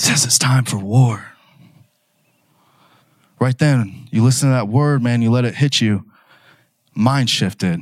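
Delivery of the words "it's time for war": imitated whisper, lower pitch. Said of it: "He whispers in my ear".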